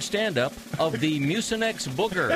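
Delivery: ordinary delivery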